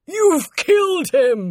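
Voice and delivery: piercing, very high-pitched shout. A man cries out after the artist lets out a terrible scream, shouting. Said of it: "shouted Luton".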